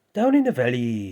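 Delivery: Welsh accent done for show. Showing how a Welsh person speaks: put-on Welsh accent. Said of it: "Welsh person".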